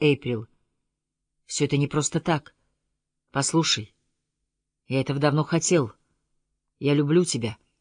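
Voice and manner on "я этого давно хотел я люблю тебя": ordinary delivery, nothing marked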